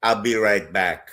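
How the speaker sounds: Jamaican accent impression. Retelling a comedian's bit, imitating the Jamaican bodega owner. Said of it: "he goes like this".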